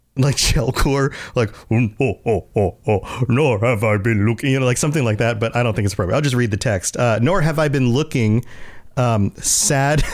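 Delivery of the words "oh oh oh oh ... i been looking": slow creature voice, every word dragged out. Reader trying out a voice for a pictured figure before reading the text, Jabba the Hutt voice. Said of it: "I kind of want to give him a Jabba the Hutt voice".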